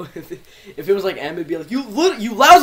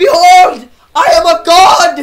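very high, very loud, grand proclaiming voice; 10 semitones higher, 11 dB louder than usual. Speaker voicing a character as the TF2 Medic voice. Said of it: "I'm going to do the TF2 medic".

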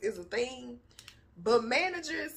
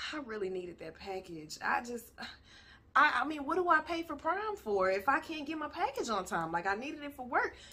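calm, wounded, hurt, acted-out delivery; 4 dB quieter than usual. Speaker shows how they call Amazon about a late package: calm, playing hurt. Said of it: "I call with the calm voice and the hurt".

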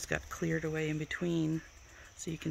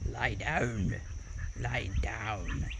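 Scottish accent, dropped low in pitch; 7 semitones lower than usual. Telling a dog to lie down, repeating the command in a Scottish accent. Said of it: "Say it with a Scottish accent".

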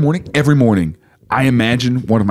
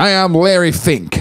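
put-on old-time radio voice, pitched up; 8 semitones higher than usual. Riffing on a 1930s actor's manager named Larry Fink: Larry Fink old-time radio voice. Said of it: "I do that radio voice a lot, like yeah. That old time radio".

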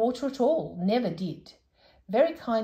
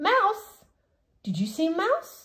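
startled and alarmed, very high cry; 9 semitones higher than usual. The old saucepan man answers Moonface, alarmed.

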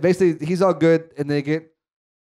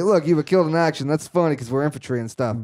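normal talking voice

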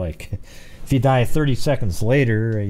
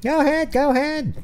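very high-pitched character voice. Urging someone to say a name fast, in Arnold Horshack voice. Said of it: "I'm saying that like Arnold Horshack on Welcome Back, Carter".

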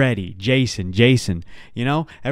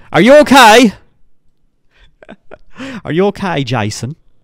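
very loud, high-pitched British accent; 9 semitones higher, 12 dB louder than usual. Asking Jason if he's okay, in a British accent. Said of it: "That's a British accent".

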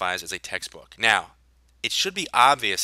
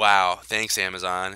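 dripping, heavy, hollow sarcasm; 3 semitones lower than usual. Speaker reacting to seller support's definition of textbooks, sarcastic. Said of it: "if you can't hear the sarcasm in my voice".

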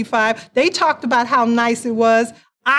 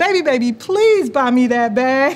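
imploring, begging, pleading tone. Acting out asking a partner for a handbag: mock begging and pleading. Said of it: "begging and pleading".

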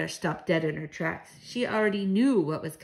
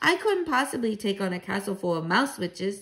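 ordinary delivery

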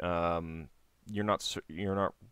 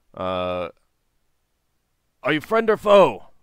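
rough, gruff, loud calling voice; 8 semitones higher, 15 dB louder than usual. Narrating to the players, a hidden voice calls back from the trees: gruff voice. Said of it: "A gruff voice calls out".

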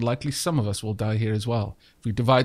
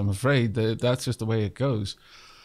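normal talking voice

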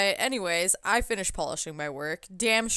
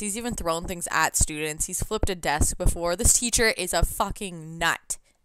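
plain

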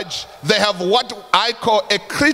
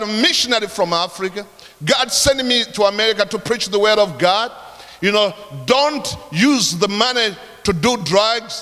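ordinary talk, nothing marked

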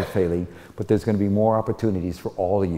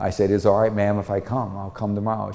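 ordinary talk

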